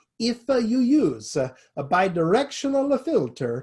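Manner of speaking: put-on slow, accented English. Retelling a conference speaker's warning, imitating Alberto Ferrari's accent. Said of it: "and I quote in his accent".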